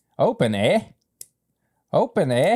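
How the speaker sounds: put-on Canadian accent, slow and high-pitched. Opening the whiskey the Canada way: put-on Canadian accent. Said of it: "Yeah, the accent".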